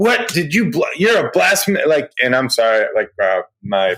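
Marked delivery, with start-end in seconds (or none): 0.0-1.8 loud, high, worked-up excited yell.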